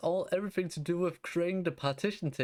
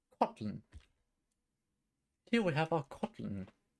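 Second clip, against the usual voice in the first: put-on British-accented delivery. Introducing your Kotlin code for an app, in a British accent. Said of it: "I'm saying it in a British way".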